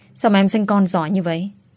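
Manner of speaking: plain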